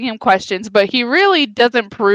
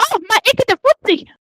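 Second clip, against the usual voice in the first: put-on Mexican accent goblin voice, much higher; 11 semitones higher than usual. Describing the goblins, the speaker quotes one of them: goblin with mexican accent. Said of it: "But they have like Mexican accents".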